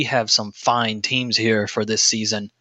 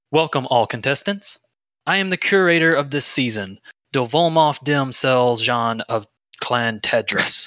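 put-on posh, very proper, refined upper-class accent. Speaker voicing the season's curator welcoming all contestants, very proper accent. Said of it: "he begins to speak with a very proper accent".

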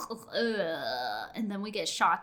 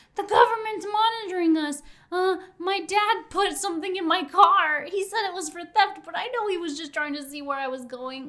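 put-on drunken yell, much higher pitch; 10 semitones higher, 8 dB louder than usual. Retelling how drunk Josh stood up and started yelling, imitating Josh's drunk yelling. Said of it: "Drunk ass Josh stands up and starts yelling".

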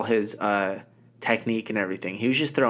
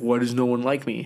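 put-on whiny fighter voice. Mocking a fighter who keeps winning: imitating Volkanovski. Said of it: "and then he's like".

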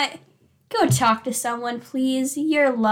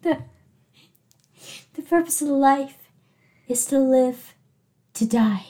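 mock dramatic delivery. Retelling own earlier line while gazing into the distance: retelling a dramatic line. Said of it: "What is that dramatic thing you did".

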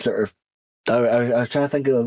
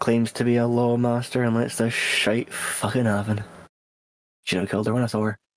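muttering under breath; 3 dB quieter than usual. During a role-play game, speaker's character mutters within another character's hearing: muttering under breath. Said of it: "I'm just gonna mutter under my breath".

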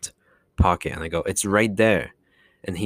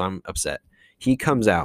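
ordinary talk

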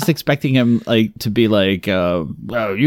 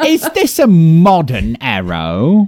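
bad, sassy put-on cockney, high and swooping; 6 semitones higher, 3 dB louder than usual. Joking about a man shot with an arrow, voice him in a bad Steven impression, like a cockney. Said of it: "so now he's like a cockney".

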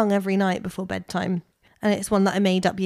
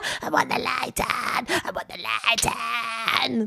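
put-on very slow, drawn-out, wailing little-child whine; 3 semitones higher, 4 dB quieter than usual. Retelling how a child demanded the light on, imitating his whine. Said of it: "an accurate impression".

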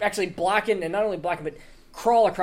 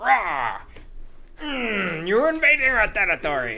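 put-on slow cave-creature monster voice; 4 semitones higher than usual. Narrating combat, voicing the other troglodyte as it attacks, in a troglodyte monster voice. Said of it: "And he goes".

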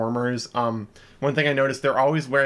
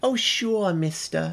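put-on New York accent, raised pitch; 5 semitones higher than usual. Describing a show's blonde character, the speaker quotes her in Audrey's New York accent. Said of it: "kind of a New York accent".

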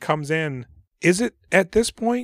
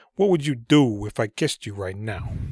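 put-on New York accent, lower pitch; 4 semitones lower than usual. Discussing a movie scene, quoting Tim Roth's character: Tim Roth's New York accent. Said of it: "Tim Roth's doing his great New York accent".

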